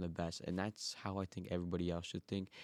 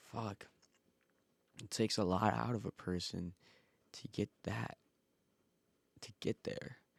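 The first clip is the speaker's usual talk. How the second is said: voice on the verge of tears, tearing up; 2 semitones higher than usual. Speaker talking about getting through their own hard past, tearing up. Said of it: "right now I'm tearing up".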